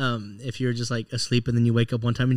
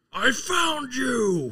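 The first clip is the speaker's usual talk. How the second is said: very high-pitched creature voice; 13 semitones higher than usual. Retelling being found in a game by a super mutant: imitating Fox. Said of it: "you just hear Fox go like".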